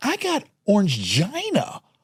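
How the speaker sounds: "gina" stretched out, high, swooping, slow, sing-song. Retelling a comic's stand-up line, imitating Sebastian's delivery. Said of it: "The way he said it".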